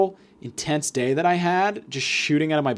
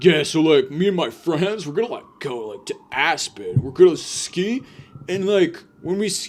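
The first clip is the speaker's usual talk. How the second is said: put-on voice sounding somewhat drunk. Imitating a rich guy telling his vacation plans: imitating a guy who sounds kinda drunk. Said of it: "always sounds like he's kinda drunk".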